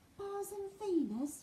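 whispering. Reading a story, Charlie reacts to the voice on the loudspeaker, whispering. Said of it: "whispered Charlie".

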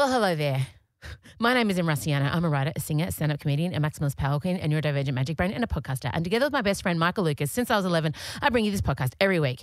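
rapid-fire, very fast, rattled-off delivery. A podcaster redoes their intro at the speed it runs in their head, very fast talking. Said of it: "That's how fast I want to talk".

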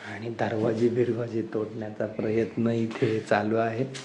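low, soft, flat muttered aside.

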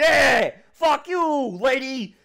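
very high, loud, slow jeering yell. Describing the characters as a peanut gallery in the stands: Gumshoe heckling from the stands. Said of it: "the Gumshoe's like".

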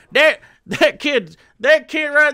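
put-on loud, drawn-out, dragged Southern accent. Ranting about people correcting others' speech, the speaker slips into a put-on Southern accent. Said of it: "I don't know why I'm doing a southern".

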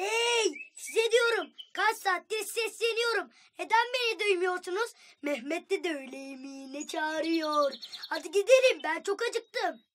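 high-pitched, loud yelling call. A narrator reads a character calling out to the twins, shouting. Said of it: "niye bağırıyorsun?".

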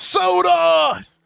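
very high, creaky voice, word drawn out. Doing a Joe Biden impression the others asked to hear: Joe Biden impression. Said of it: "you wanna hear my Joe Biden impression?".

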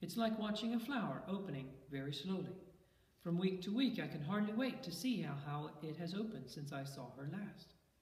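plain

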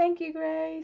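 crying while talking. Talking about a loved one who loved planes, crying while talking. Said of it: "Sorry for crying, guys".

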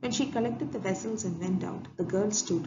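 ordinary delivery, nothing marked

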